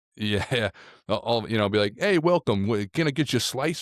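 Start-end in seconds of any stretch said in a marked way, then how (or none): 2.0-3.8 put-on New York accent, higher pitch. A New Yorker imagines greeting visitors, in a put-on New York accent. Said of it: "accent that I don't really care for".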